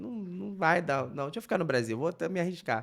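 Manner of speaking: ordinary talk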